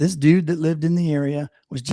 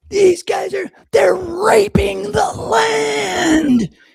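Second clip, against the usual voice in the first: acted, very high, loud furious rant, "land" stretched; 6 dB louder than usual. Retelling how a man lost it while telling his story to a news reporter: imitating a furious outburst. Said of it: "He just lost his shit and was like".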